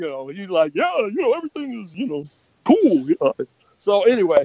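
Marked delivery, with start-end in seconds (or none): 0.7-3.1 bouncy, buoyant, upbeat delivery. Imitating a buoyant colleague named Keith Pollard: imitating buoyant Keith Pollard. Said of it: "He was very, you know, buoyant".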